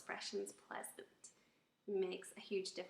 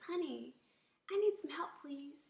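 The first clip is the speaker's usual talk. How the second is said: polite, respectful, slightly higher pitch; 6 semitones higher, 4 dB louder than usual. Demonstrating a respectful way to ask for help, in a respectful tone. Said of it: "in a respectful tone of voice".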